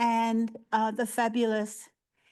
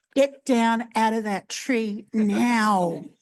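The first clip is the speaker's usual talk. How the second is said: big, booming, drawn-out teacher voice; 7 dB louder than usual. A primary school teacher demonstrating a big booming voice. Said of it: "I've got a big booming voice too".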